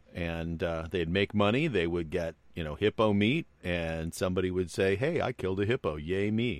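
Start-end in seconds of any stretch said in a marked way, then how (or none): 5.0-6.6 put-on, very sarcastic, cheerful tone. Imitating a hunter who killed a hippo: imitating someone very sarcastically. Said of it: "I say that very sarcastically".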